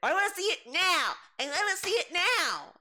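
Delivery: put-on very high, drawn-out, whiny, childish baby voice. Mocking a customer who demands to play now: imitating a whiny baby. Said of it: "how much of a baby are you".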